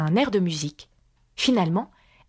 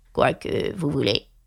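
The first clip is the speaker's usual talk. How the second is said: deep, low, grave, husky, hoarse voice; 7 semitones lower than usual. Reading a frog's reply to Alice in a story: deep hoarse voice. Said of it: "d'une voix grave et enrouée".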